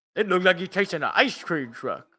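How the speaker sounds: crude caveman-style talk, primitive way of speaking. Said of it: "talking like a, like a Neanderthal".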